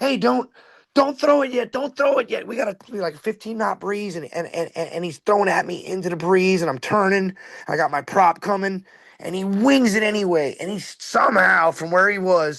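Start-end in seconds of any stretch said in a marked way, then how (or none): 0.0-4.2 play-acted, frantic, high, urgent screamed yell. Retelling screaming at a man about to throw a rope, re-enacting the screamed warning. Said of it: "I'm screaming at him".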